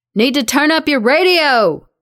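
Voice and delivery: loud, high near-shout, almost yelling. Over the radio, [name] tells Esther to turn up her radio, almost shouting. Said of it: "[name] is almost shouting".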